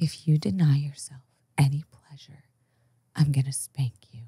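calm, even voice. Retelling what a dominatrix said in an interview: imitating a calm, never-raised voice. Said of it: "She never raised her voice above this".

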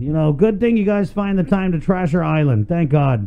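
sarcastic, mocking put-down tone. Reporting on illegal dumpers trashing our island, speaking sarcastically. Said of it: "That was sarcasm".

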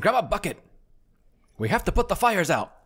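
high, frantic, scampering swamp-creature yelling. Narrator voicing a bullywug scampering about, bullywug yelling. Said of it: "a bullywug like scampering, yelling".

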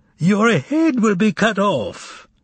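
very high, loud, gleeful, joyous voice. A stranger announces to Berlioz after muttering, loud and joyous. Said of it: "announced loudly and joyously".

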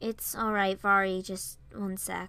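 ordinary delivery

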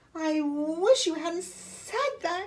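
high-pitched, groaning, complaining voice. The patient answers the therapist's instruction, groaning. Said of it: "Camilla groaned".

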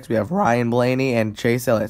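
cracking voice. Reading out the starting lineup row by row, voice cracking. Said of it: "Sorry for the voice crack".

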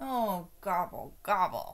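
grumbling. Turkey, told by a child to leave the egg hunt, grumbled. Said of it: "grumbled Turkey".

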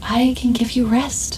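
gentle, soft, hushed cooing. Narrator reads a woman's offer to the narrator: soft cooing. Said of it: "she cooed softly".

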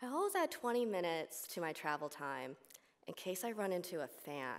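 normal talking voice

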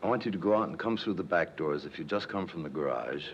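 ordinary talk

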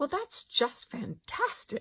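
put-on small, precise South African accent. Quoting what she said in reply, in a precise South African accent. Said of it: "In this little precise, like South African accent".

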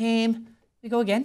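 put-on Liverpool Scouse accent. Showing the other speaker his Scouse accent, doing a Steven Gerrard Scouse impression. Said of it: "Is that how he really talks?".

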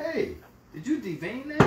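fussy, pedantic, way-up-high voice.

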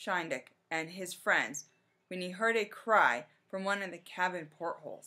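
plain

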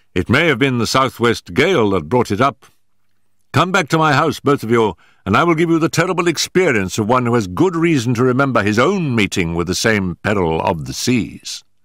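ordinary delivery

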